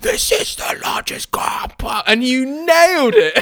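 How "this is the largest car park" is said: slow, drawn-out, all-breath whisper scream. Retelling an old voice note: imitating own whisper scream. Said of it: "whisper screaming".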